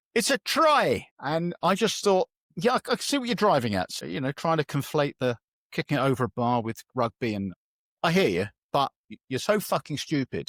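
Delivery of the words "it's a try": mock yell, very high pitched shout. Retelling what an old guy at football shouted out: imitating a shout. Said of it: "Sam shouted out".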